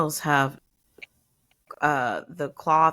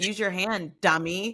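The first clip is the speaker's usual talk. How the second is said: ordinary delivery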